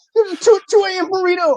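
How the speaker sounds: very high pitch with a stutter at the start. Doing a Rick and Morty bit about a social media show, Morty voice. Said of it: "Here's Rick and Morty talking".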